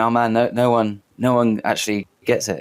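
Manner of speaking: ordinary talk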